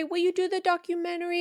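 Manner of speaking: put-on small, childlike kid voice. Speaker imitates a man's kid asking someone a question, in a kid voice. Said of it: "in just, like, a kid voice".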